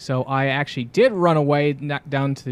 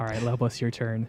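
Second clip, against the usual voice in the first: ordinary delivery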